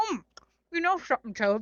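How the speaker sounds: loud talking through a full mouth of food. Narrator reading Frog's line to Toad as they eat cookies, talking with mouth full. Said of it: "said Frog with his mouth full".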